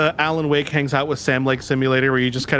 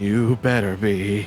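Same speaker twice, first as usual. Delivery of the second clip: put-on ominous, threatening cartoon voice; 4 semitones lower than usual. Telling another player they had better still be alive: ominous threatening Homer Simpson voice. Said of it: "the ominous, threatening Homer Simpson voice".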